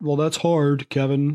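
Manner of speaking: mock, put-on whiny complaining voice. Imitating people who complain to him, in his mock 'it's hard' voice. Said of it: "That's my new it's hard voice".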